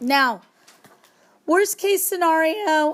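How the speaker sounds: voice breaks mid-phrase, cracking up high. Partway through an algebra explanation, the speaker's voice gives out: voice crack. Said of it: "did you hear that voice crack?".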